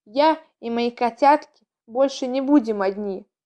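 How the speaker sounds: ordinary delivery, nothing marked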